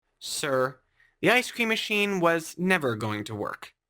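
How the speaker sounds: ordinary talk, nothing marked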